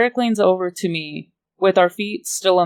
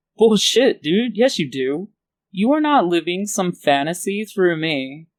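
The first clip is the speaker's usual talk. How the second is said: cocky, swaggering, arrogant know-it-all tone. Reading a story aloud, a character's brash retort: cocky voice. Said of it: "I say in a cocky voice".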